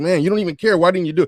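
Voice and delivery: scolding yell. Retelling how he yelled at a teammate: imitating someone yelling. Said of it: "he yelling at him like".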